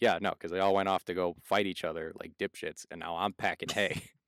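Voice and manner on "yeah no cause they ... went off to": ordinary delivery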